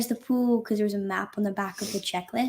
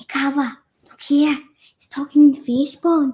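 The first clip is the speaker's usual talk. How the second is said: put-on Scottish accent, higher and louder; 6 semitones higher, 9 dB louder than usual. Quoting a favorite movie line: put-on Scottish accent. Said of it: "a little kid doing a Scottish accent".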